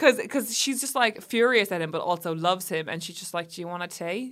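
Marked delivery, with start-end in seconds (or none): 3.5-4.3 homemade put-on Australian accent. Quoting a woman in a story, in an imitated Australian accent. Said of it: "And that's my Australian accent".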